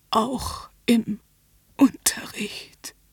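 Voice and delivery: strained words, each pushed out with effort. Under the narrator's questioning, he forces out his answer with effort. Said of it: "stieß er mit Mühen hervor".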